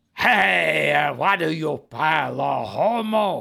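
low, rough voice, with "hey" drawn out. Trying an impression that a listener asked for: Chico Marx impression. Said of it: "try it, Chico".

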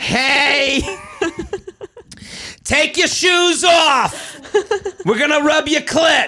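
motherly voice, pitch way up, "hey" stretched out.

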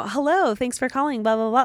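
high, polite telephone-answering voice. Speaker demonstrates the voice they use when answering calls from strangers, high polite phone voice. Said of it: "my voice goes up like to like three higher octaves".

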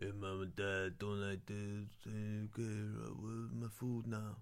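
very slow, drawn-out action-movie hero voice. Doing a celebrity voice for an imagined son: Vin Diesel voice. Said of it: "the sort of triple X Fast and the Furious voice".

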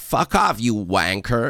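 slow, drawn-out, put-on American accent. Imitating an american swearing with a british word: imitating an american saying it. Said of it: "when an American does use it though".

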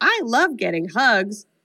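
small, mechanical talking-doll voice, like a tiny robot. Retelling a scene where the doll Chucky talks, in Chucky's little robot doll voice. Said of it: "in this little robot doll voice".

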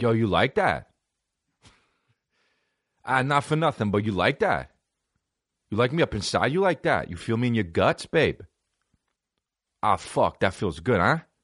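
put-on heavy, serious, thick New Jersey accent. Showing the accent that comes out when making love, serious Jersey accent. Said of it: "I have a fucking serious Jersey accent".

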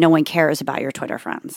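ordinary talk

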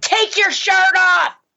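very high-pitched yelling shout. Recounting yelling at her husband, retelling a yell. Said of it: "So I'm yelling at my husband".

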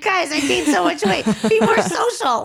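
high-pitched, laughing through the words.

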